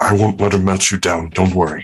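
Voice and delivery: whispering. Voicing a character reassuring the others as someone passes by, whisper. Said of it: "just kind of whisper".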